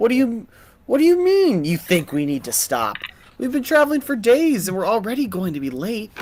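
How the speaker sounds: put-on woman's voice. The game master voices the first stranger, talking to the bigger stranger, in a smaller female's voice.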